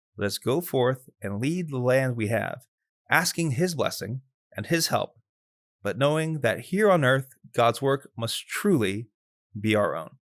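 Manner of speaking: sincere, gospel-reading delivery, not priestly voice. Reading a highlighted text aloud as if reading the gospel: reading like the gospel, not priest voice. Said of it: "read this one as Father Anthony reading the gospel".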